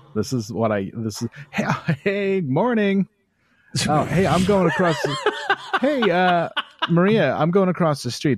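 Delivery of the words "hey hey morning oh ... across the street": put-on cheery, fake friendly voice, higher. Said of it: "and then this is my voice".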